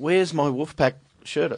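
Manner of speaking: acted, mild, held-back, half-hearted shout. Retelling calling out to a wife while hunting for a shirt: imitating own mild yell. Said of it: "I did have to yell at my wife tonight".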